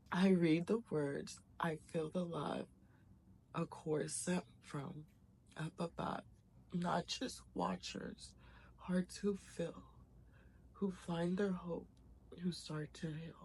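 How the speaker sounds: tearful, crying voice breaking while speaking. Reading the written words aloud to listeners, crying while reading. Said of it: "I'm just gonna not stop crying".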